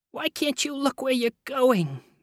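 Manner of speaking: whiny moan. Miss Dembecki, her foot trodden on, scolds Nick, moaning. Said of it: "moaned Miss Dembecki".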